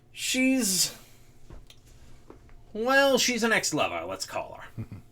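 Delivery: talking around a pipe in the mouth. A boss chewing a pipe answers the party's question; boss chewing on a pipe. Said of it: "who's sitting back and he's chewing on a pipe. / who's sitting back and he's chewing on a pipe. / And I need you to pull a job for me. / Oh, aye. ... Oh, my lad".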